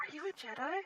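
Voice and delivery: whispered voice. Voicing a character asking another character about Jedi: whispering in character. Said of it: "Tess kind of whispers".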